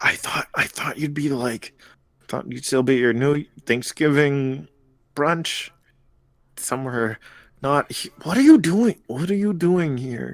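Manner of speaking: hushed whisper. Voicing a character who leans in toward the player: whispering. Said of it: "He, like, leans in and whispers".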